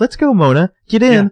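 very high voice, like calling a dog. Retelling a scene where one character orders another into the car: imitating calling someone like a dog. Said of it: "'cause Arya's calling Mona like a dog".

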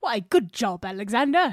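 playful, fake put-on British accent. Podcast host praising the co-host at the sign-off, in a put-on british accent. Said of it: "Why do we sound British all of a sudden?".

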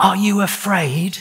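trembling whisper. Narrator reads him whispering a question to Rat: shaking whisper. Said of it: "he found breath to whisper, shaking".

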